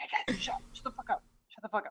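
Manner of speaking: quiet, breathy whisper under the breath. Playing a character who hushes the goblins: whispering. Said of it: "I start whispering".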